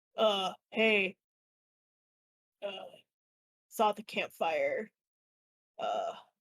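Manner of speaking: hulking, low, beefy orc character voice. Narrating to the players, voicing an orc stepping out of the bushes, in a beefy orc voice. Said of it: "a nice beefy orc comes out".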